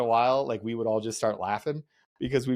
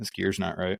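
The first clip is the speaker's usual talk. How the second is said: quiet, lower-pitched voice; 4 semitones lower than usual. Retelling how an instructor walked in and spoke: imitating an instructor speaking quietly. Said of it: "walks in and super quiet".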